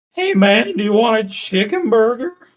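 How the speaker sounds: mock drunk voice, very high and loud. Retelling meeting a guy after a concert: imitating a drunk guy. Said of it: "he was real drunk".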